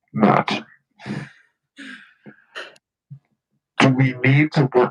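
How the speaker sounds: very low, dark, loud, sinister creepy voice. Asking matt a question, the speaker puts on a creepy voice. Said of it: "I will ask Matt in the creepy voice".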